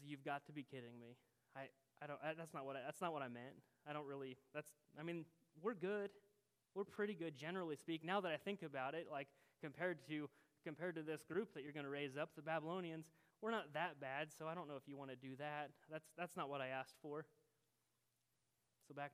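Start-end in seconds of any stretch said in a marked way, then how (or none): none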